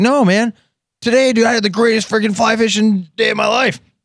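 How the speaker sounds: put-on screeching drunk outburst, very high and shrill. Speaker retells a wasted fisherman answering his buddies, retelling a guy's loud yelling. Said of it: "just yelling, screaming, just loud as hell".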